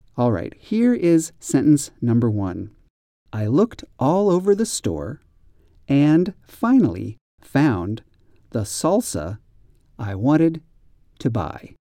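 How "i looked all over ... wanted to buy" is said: slow, deliberate reading aloud with broken, halting phrasing. Reading sentence number one aloud, at a slow reading pace. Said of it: "I'm going to read the sentences much more slowly".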